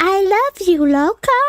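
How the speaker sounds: put-on clichéd high, little older man's voice. Quoting an older man who always said this to the speaker, imitating his high voice. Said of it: "his voice was like really high".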